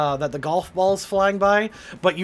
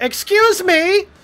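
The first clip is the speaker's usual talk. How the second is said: shrill, very high, raised, distant woman's shout; 12 semitones higher, 6 dB louder than usual. Telling a story, the speaker voices a woman over the hill: imitating a woman shouting from afar. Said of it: "a female voice over the hill shouting".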